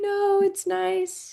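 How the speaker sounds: squeaky little voice, going high. Asking a guest how they reacted to the gifts, voice going high. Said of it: "Like my voice just got so high".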